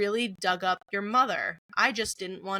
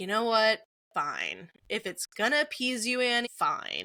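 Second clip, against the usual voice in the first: put-on, exasperated, resigned giving-in tone. Retelling a scene where Steve finally gives in: imitating Steve's fed-up exasperation. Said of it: "he is just at the end of his rope".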